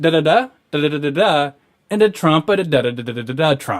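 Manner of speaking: mock, loud, high sing-song joke cadence. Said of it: "everything has the same co-, cadence".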